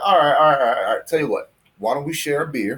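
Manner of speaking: put-on heavy Southern accent. Retelling how a Southern man answered a city inspector, in a Southern accent. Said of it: "He's very Southern".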